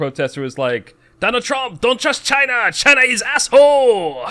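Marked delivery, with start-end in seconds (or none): 1.2-4.3 mock sincere outburst, shrill and booming. Retelling what a protester said in a video: imitating a fervent, sincere outburst. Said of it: "says it with such, like, verve and sin-, sincerity".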